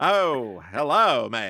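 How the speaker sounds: deliberate, put-on mid-Atlantic accent. Speaker demonstrating an accent: mid-Atlantic accent. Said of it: "This is my mid Atlantic accent".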